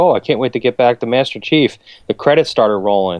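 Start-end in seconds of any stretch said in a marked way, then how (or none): none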